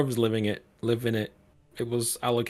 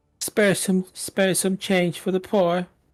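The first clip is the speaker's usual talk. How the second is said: higher-pitched, pleading, begging woman's voice; 7 semitones higher, 4 dB louder than usual. Narrating a game scene to a player passing a beggar, in a female half-elf beggar voice. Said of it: "And she says".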